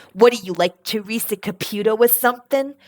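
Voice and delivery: heavy put-on New York accent. Retelling what a friend said about a crazy story: imitating a new york accent. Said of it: "he goes with his New York accent".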